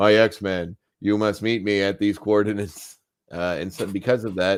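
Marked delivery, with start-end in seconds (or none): 0.0-3.0 put-on, completely deadpan, flat monotone delivery. Recapping an X-Men episode, imitating Charles being completely deadpan. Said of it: "Charles is completely deadpan, in which he's like".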